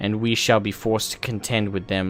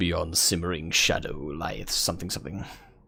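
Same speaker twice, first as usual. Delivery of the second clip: put-on, mock-grand epic saga narrator voice; 3 semitones lower, 6 dB quieter than usual. Reading on-screen game text aloud in a put-on epic voice. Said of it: "I should do this in more epic voice".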